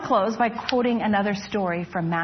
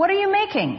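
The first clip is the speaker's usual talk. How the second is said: very high, loud, insistent shout; 11 semitones higher, 3 dB louder than usual. One of the cave people calls to a silent stranger in the darkness: shouting even louder. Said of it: "one shouted even louder".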